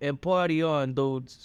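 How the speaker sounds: put-on Italian mobster accent. Taking a turn in a bit the other speaker proposed, Italian mobster accent. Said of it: "let's do it with in Italian mobster accents".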